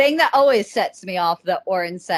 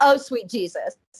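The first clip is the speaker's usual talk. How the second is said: ordinary delivery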